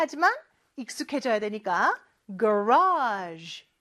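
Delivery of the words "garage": garage stressed with a marked pitch contour. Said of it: "높낮이 잘 기억해 주셔야 돼요".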